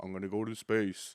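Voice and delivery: put-on mumbling actor voice. Showing another speaker a Sylvester Stallone voice: Sylvester Stallone impression. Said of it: "That was a mix of both".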